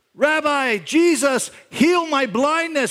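very high, very slow, drawn-out screaming. Retelling a gospel story of a blind beggar calling out: imitating someone screaming out. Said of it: "He starts screaming out".

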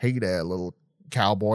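put-on old-fashioned western movie cowboy voice. Showing how a character speaks with head down: old-fashioned movie cowboy voice. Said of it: "It's just an old-fashioned cowboy sort of movie thing".

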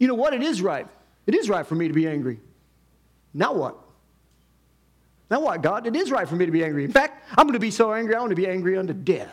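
put-on bratty, snippy, sarcastic tone. Acting out Jonah arguing with the creator: imitating snippy, sarcastic Jonah. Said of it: "He's kinda sarcastic".

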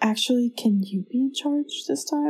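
barely-there, very quiet, soft hushed voice. Retelling how he answered when told he was in charge, retelling a quiet reply. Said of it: "Like saying it really quietly".

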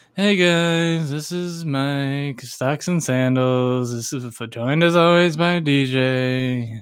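put-on mopey voice. Teasing the co-host about his customary show introduction, imitating Mike's mopey intro. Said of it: "your customary mopey introduction".

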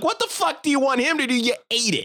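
mock, very high-pitched, shrill yelled outburst. Retelling how the speaker yelled at their mom in front of a server: retelling yelling at mom. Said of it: "I start yelling at my mom".

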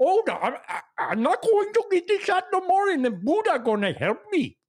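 very high, heavily laid-on put-on Nigerian accent. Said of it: "you're required to have a Nigerian accent".

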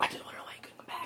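fast, soft whisper.

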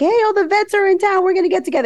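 eager, high, loud excited voice.

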